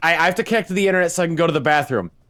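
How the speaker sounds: half-awake, bleary, pressing, urgent, stumbling speech. Retelling what a sleepwalking mom said: imitating urgent bleary-eyed speech. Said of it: "she's speaking with some sense of urgency".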